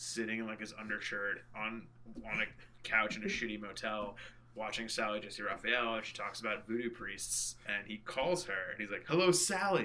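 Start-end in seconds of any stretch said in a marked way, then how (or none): 9.1-9.9 bright, pitched-up, wonderfully optimistic put-on tone. Retelling a funny movie scene where Gomez phones Sally, imitating his wonderful optimism. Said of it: "with this like wonderful optimism in his voice".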